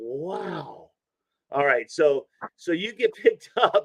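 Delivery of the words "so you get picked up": high giggling through the words. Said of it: "I'm sorry for giggling".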